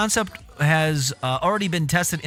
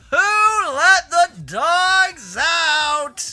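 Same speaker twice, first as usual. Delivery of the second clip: mock drunken holler, very high, very slow, drawn out; 12 semitones higher, 5 dB louder than usual. Retelling a drunk neighbor yelling in his backyard at midnight: imitating a drunk guy yelling. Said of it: "And then he'd say it again".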